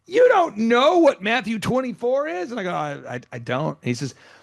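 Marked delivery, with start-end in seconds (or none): 0.1-2.5 mock exasperated yelling, loud and high. Retelling the top pastor guy's reply to the speaker's question, imitating frustrated yelling. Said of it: "he's like yelling like he's so frustrated".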